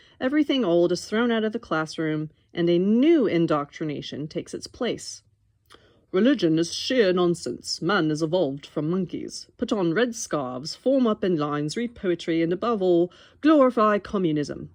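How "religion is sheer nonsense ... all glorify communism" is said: put-on British accent throughout. Reading a passage aloud in a British accent. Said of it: "I'm sorry I did a British accent".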